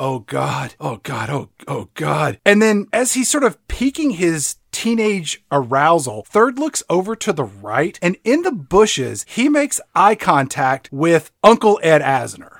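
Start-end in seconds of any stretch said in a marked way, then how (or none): 0.0-2.4 slow, long, drawn-out, lingering moans. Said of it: "he just starts moaning".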